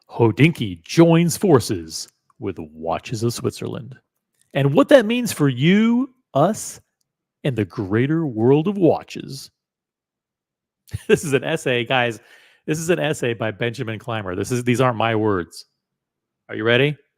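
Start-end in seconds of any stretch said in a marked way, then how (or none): 0.2-9.5 put-on radio broadcast announcer voice. Reading an essay aloud for listeners in the car, in a broadcast voice. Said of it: "I'm going to put on my best my best broadcast voice".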